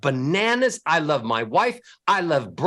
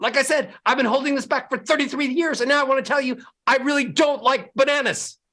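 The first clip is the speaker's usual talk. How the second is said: flat, fast, loud, monotone, rattled-off angry rant; 7 semitones higher than usual. Demonstrating to listeners how anger should sound: fast, loud, monotone anger. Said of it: "fast pace, monotone, and extra volume to sound angry".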